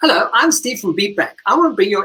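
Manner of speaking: high, cheerful, happy call-centre voice. Retelling an audition for an ad character: happy call center guy voice. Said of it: "I can sound like a happy guy".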